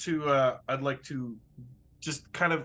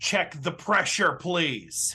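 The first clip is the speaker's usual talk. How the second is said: strict, serious, stern and firm; 3 semitones higher than usual. Speaking in character to a crewmate once he looks over: said sternly. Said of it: "I'm going to sternly say".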